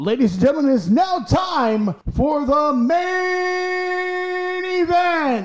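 very high, very slow wrestling ring announcer voice. Suggesting how a ring announcer could open the segment: ring announcer voice. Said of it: "you mean ring announcers?".

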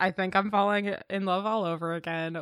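normal talking voice

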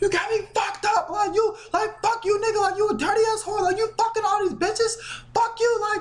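very high, furious, screaming rant. Retelling a woman screaming at a man on the phone outside the apartment; retelling a screaming rant.

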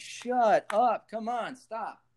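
mock very slow, high, drawn-out shout. Retelling listening to a past recording of oneself: imitating own screaming. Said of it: "I'm screaming at the".

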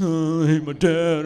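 slow, sniffling, teary whimper. Retelling how a friend came in after his dad yelled: imitating someone sniffling. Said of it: "he comes in all sniffling".

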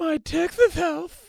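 put-on pretentious voice. Mocking the other speaker's words as pretentious: mocking pretentious voice. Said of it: "what a pretentious dick you sound like".

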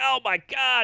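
shouted, high-pitched yelling outburst. Recounting pulling up at the gate, retelling yelling at him. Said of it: "So now I'm yelling at him like".

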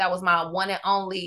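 ordinary delivery

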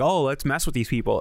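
ordinary delivery

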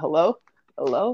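mock confused old grandparent voice. Mocking a caller's repeated hellos like a grandparent confused by FaceTime. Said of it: "Sounds like our grandparent trying to figure out how to use FaceTime".

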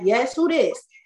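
unprofessional, offhand tone full of attitude. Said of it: "Not even professional".

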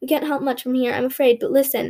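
plain reading voice

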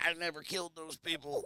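very high-pitched cartoon duck voice. Playing a duck on trial answering the accusation, Daffy Duck voice. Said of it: "Daffy Duck?".

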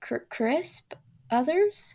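nervous, jittery stammer. A man, told he would have burned to a crisp, stutters nervously. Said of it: "he stuttered nervously".

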